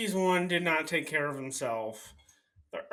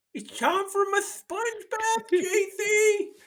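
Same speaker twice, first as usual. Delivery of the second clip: fake sick voice, giggling, higher pitch; 3 dB louder than usual. Acting out faking illness to get a sponge bath: pretend sick, giggling. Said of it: "sitting there, like, giggling".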